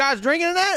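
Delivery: put-on Southern accent, pitched high. Retelling being pulled over after a country concert, the speaker quotes the officer: imitating a cop's southern accent. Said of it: "I don't know why he had a southern accent".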